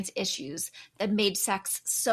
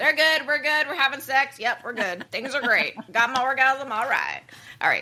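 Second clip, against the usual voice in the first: loud, high put-on Southern accent; 6 semitones higher, 6 dB louder than usual. Host voicing older men after a survey finding, in a southern accent. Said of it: "I slipped into a southern accent there".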